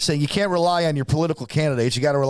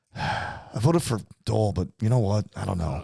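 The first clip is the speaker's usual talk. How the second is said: mock dissatisfied, grudging, hedging tone; 6 semitones lower, 4 dB quieter than usual. Retelling a father's answer about who he voted for: imitating dad, dissatisfied. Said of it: "he wasn't gonna be satisfied no matter what".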